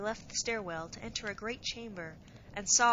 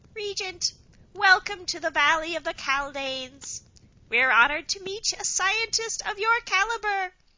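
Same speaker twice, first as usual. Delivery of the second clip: piercing, very high, loud squeaky voice; 10 semitones higher, 8 dB louder than usual. A narrator reads a Caldane welcoming the Regent, high squeak of a voice. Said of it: "said in a high squeak of a voice".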